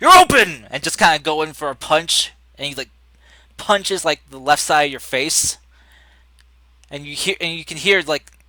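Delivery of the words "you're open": very loud, high-pitched in-character yell. Voicing a fighter who attacks during a swing: in-character yell. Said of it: "yell out".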